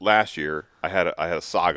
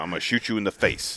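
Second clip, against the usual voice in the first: put-on stern, scolding tone; 2 semitones higher than usual. Retelling warning a trapped possum at the cage: retelling a stern talk. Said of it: "give 'em a good stern talk".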